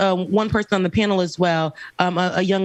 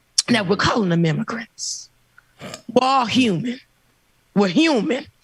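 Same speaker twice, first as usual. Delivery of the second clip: put-on small-town Georgia country accent; 3 semitones higher than usual. Retelling what a preacher said to the people, imitating a georgia country accent. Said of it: "She had a country accent".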